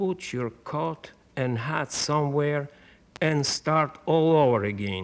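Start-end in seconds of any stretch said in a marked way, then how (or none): none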